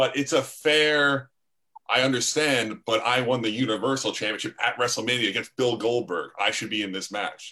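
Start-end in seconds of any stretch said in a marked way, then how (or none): none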